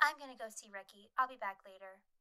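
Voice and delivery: play-acted, dead level, flat, toneless monotone. Recapping a show, the speaker quotes Angela leaving after Judy runs off: Angela's monotone delivery. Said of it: "monotone as fuck".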